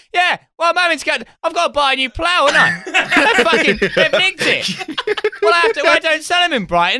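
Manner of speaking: very high, bellowed, shouted rant. Retelling a man overheard on a train: imitating him shouting on the phone. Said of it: "some guy shouting on the phone".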